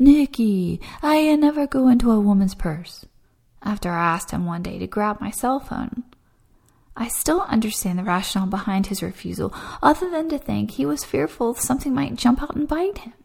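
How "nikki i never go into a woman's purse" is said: put-on Italian accent in English. Quoting what the father-in-law always told the speaker, in an italian accent. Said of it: "in his Italian accent".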